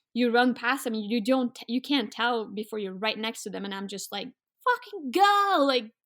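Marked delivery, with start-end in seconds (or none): 4.7-5.6 desperate, very high, loud scream. Retelling a moose encounter, yelling at the lead dog: retelling a scream at the dog. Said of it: "screaming to the lead dog".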